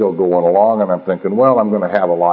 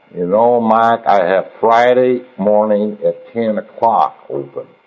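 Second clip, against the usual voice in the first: put-on Oklahoma accent; 2 semitones higher than usual. Retelling how he is told when to come see him, imitating Don's Oklahoma accent. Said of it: "see if I can do my Oklahoma accent".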